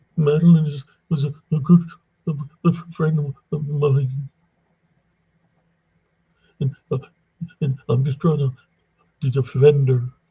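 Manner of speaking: play-acted weepy crying delivery, high-pitched. Retelling what a man said while crying to him over the phone, imitating someone crying. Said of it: "He was literally crying over the phone".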